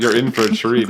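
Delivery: ordinary talk, nothing marked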